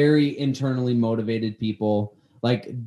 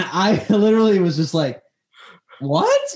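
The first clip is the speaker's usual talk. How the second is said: ordinary delivery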